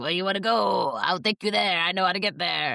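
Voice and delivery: put-on very strong New York cab driver accent. Imitating a game's taxi driver asking where to go: strong New York accent. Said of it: "a very strong, uh, I think New York accent goes".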